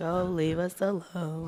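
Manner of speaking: very slow, dragged-out drawling words. Showing how the name is pronounced: Eeyore voice.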